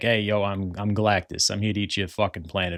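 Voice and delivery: gangster tough-guy voice. Imagining Galactus arriving with an unexpected voice: Silvio Dante mobster voice. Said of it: "sounded like Silvio Dante from The Sopranos".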